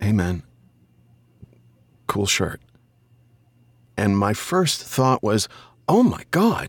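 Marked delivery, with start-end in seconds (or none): 0.0-2.6 play-acted very timid, meek, painfully shy voice. Retelling what a geek said to you about your shirt, imitating a very timid voice. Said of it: "in a very timid voice".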